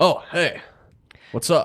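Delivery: slow, laid-back dude-bro voice. Opening the door to a visitor; talking like a bro. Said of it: "you don't have to talk like a bro to me".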